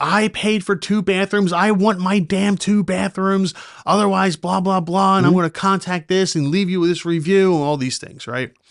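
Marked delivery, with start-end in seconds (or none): 0.0-7.6 mock irate, angry, loud yelling. Retelling a phone call where she yelled at the speaker, imitating her yelling on the phone. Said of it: "she's yelling at me".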